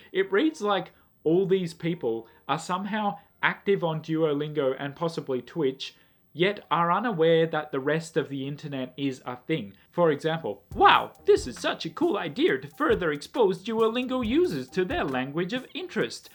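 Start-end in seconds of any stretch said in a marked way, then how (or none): 10.7-16.3 high, swooping mocking voice. Quoting an online commenter's post, mocking commenter voice. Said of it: "I can't do that voice anymore".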